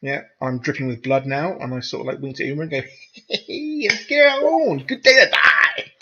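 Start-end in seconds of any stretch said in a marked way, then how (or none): 3.3-5.8 high, loud, stretched-out delivery. Dripping with blood, a role-player winks to a companion, in Cat from Red Dwarf voice. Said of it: "I don't know why I sound like the cat from Red Dwarf".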